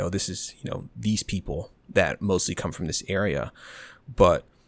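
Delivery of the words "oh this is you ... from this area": ordinary talk, nothing marked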